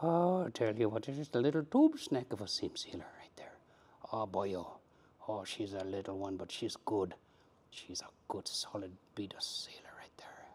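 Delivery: put-on Scottish accent slipping into Irish. Doing a bit in a put-on voice, a Scottish accent slipping into Irish. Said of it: "slipping from both Scottish to Irish accent".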